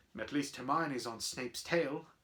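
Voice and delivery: ordinary delivery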